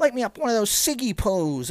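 thirties screen star voice. Imitating an actress's line from the movie: Amanda Seyfried old-timey voice. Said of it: "the old-timey voice".

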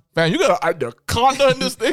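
put-on stutter. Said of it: "He goes stutter".

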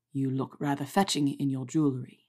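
low, intimate, rumbling undertone. A man falls into step beside a colleague, speaking in a low rumble. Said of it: "He lowered his voice to a rumble".

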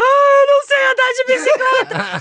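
shrill, very high, loud, desperate sobbing wail. Retelling how a three-year-old reacted when the teacher came over: imitating a child crying desperately. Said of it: "ela chorando desesperadamente".

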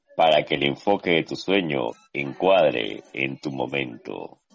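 sultry, seductive purr, very low. Asked to say an ad line again in a sexy voice: seductive sexy voice. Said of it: "así con tu voz que embaraza".

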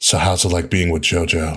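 low whispering. Telling a wrestling joke, the speaker quotes what Undertaker whispered: Undertaker whispering. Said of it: "Undertaker whispered".

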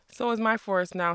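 ordinary delivery, nothing marked

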